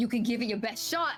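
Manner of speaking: quick, sharp, fired-straight-back delivery. Voicing the Dragonborn answering a threat: Dragonborn shouting back. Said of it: "he shouts back".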